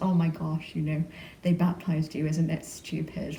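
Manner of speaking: ordinary talk, nothing marked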